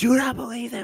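acted all-out screaming, very high-pitched and shrill. Retelling the last seconds of a game: imitating Cypher screaming. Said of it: "Cypher's screaming at me. He's like".

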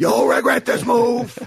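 put-on male full-volume scream. Describing a late Pacino movie scene: imitating Pacino screaming. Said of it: "just screaming at the top of his lungs".

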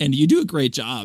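ordinary talk, nothing marked

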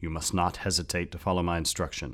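ordinary delivery

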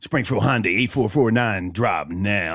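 put-on radio ad announcer voice. Reading a Hyundai dealership phone number, in a put-on radio announcer voice. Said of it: "That's my radio voice".

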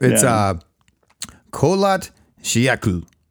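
attempted put-on Russian accent. After being praised for the accent, saying a name in a russian accent. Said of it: "say this in my best Russian accent".

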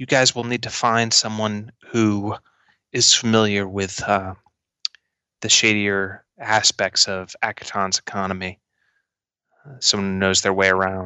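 hushed, whispered put-on character voice. Game master voicing Pitch leaning forward to the players, Pitch whispering. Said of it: "kind of whisper".

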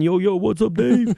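put-on Brooklyn accent. Speaker says hello to a man originally from brooklyn, in a brooklyn accent. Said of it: "Do that accent".

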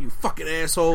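plain

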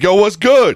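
loud voice. Retelling a phone call from a friend: imitating a loud greeting.

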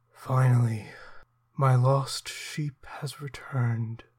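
icy, cold, menacing, malicious voice. Voicing a hooded figure greeting a returning player: cold, malicious voice. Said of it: "cold and malicious".

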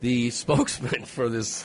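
giggling and laughing through the words. Reading out a news story about a robot to co-hosts, laughing while talking. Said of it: "I'm sorry, I'm laughing".

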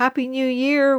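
loud, high, called-out shout. They call out as they drive off: shouting. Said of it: "We shouted as we drove off".

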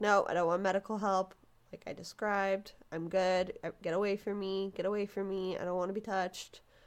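ordinary talk, nothing marked

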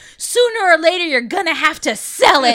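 mock angry, loud shout. Retelling a movie scene where a man yells at a woman across a casino, retelling an angry yell.

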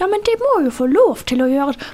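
put-on old-woman Bergen dialect, high. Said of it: "På sånn skikkelig gammel dame bergensk".

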